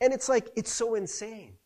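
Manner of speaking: ordinary talk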